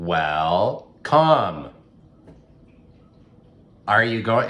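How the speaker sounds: dry, unwelcoming, loud, swooping sarcasm, well drawn out. Demonstrating a phrase said to people walking through your door, sarcastic. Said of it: "It's a very sarcastic uh, phrase".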